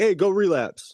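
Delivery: very high, brash, loud yelled shout. Describing how the disease does not talk: imitating a loud voice. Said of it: "real loud".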